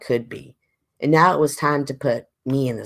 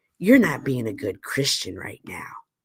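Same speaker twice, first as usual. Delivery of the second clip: stern, masculine voice. Retelling one panelist's remark to another panelist, imitating a stern manly voice. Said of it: "in his his sternly manly voice says".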